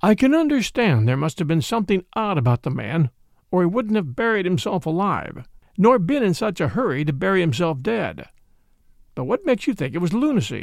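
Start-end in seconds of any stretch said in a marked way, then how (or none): none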